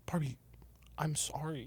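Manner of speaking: stunned, hushed, very quiet, shocked voice. Acting a scene on cue, apologizing to another character: shocked apology. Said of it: "it really reflected the shock".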